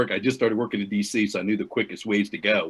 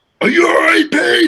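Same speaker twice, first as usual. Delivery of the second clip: pissed-off coach voice, shrill, very high, very loud; 12 dB louder than usual. Retelling how the coach asked her after she botched talking to the kids, mock-angry coach. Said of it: "he's pissed off".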